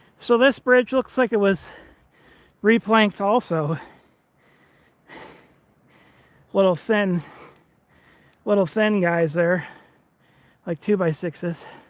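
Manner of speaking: out of breath, catching breath. Out of shape after a little hill, pausing on a bridge, catching breath. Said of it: "Don't mind me as I catch my breath here".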